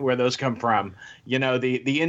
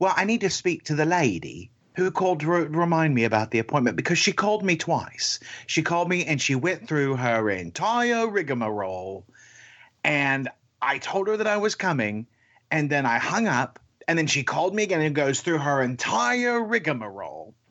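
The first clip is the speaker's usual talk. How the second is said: put-on British-accented woman's voice; 3 semitones higher than usual. Retelling what a patient asked at a doctor's desk: imitating a British accent. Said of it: "this woman with a British accent goes".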